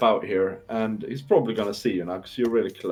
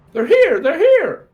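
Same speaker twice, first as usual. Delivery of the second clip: very high, very loud creature squeak; 9 dB louder than usual. Tabletop character darting back to hide, squeaking. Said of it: "He squeaks".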